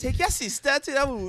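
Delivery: put-on Trinidadian accent. Retelling a mom's order to take a sibling along: imitating a Trinidadian mom's accent. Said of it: "with a Trinity accent".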